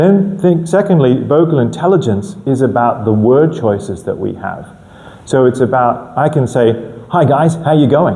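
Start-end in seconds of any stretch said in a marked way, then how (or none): 7.1-8.2 quick-fire, upbeat, energetic and lively delivery. Demonstrating a greeting for an introduction, energetic and fast. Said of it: "It's very nice and energetic, fast words".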